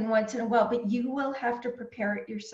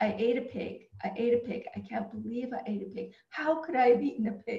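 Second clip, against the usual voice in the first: ordinary talk, nothing marked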